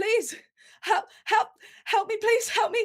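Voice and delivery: very high-pitched, panicking voice. Voicing an injured stumbling figure begging the players: panicked plea for help. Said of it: "they look like they're panicking".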